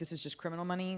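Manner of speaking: ordinary delivery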